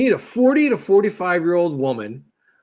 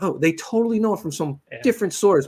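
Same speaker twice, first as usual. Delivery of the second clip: ordinary talk, nothing marked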